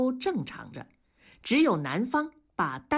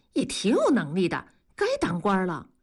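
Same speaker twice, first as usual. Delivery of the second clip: ordinary delivery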